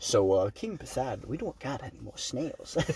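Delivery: hushed, breathy whisper. Retelling a movie scene, imitating Poseidon's servant. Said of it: "servant that he has".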